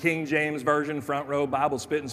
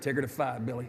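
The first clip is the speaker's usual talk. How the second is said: muttering, much quieter, lower; 2 semitones lower, 6 dB quieter than usual. Retelling what his mother said at a grocery store, muttered under breath. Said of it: "I heard my mother under her breath say".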